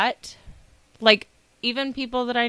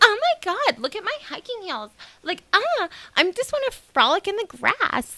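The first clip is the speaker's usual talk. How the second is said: put-on very high, swooping, sing-song bubbly girly voice; 12 semitones higher than usual. Mocking a way of talking no real woman uses, in a mock high-pitched bubbly woman voice. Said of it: "they like that high pitched".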